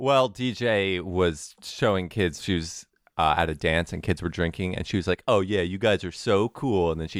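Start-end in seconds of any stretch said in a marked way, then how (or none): 5.3-6.9 acted-out mocking tone. Retelling how she made fun of kids drinking at a dance, retelling mocking praise. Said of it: "I was making fun of them".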